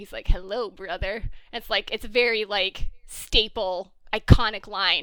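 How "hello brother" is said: acted-out smug, cocky, self-satisfied tone. Retelling the pilot scene of a show, imitating Damon's cocky tone. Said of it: "in his cocky".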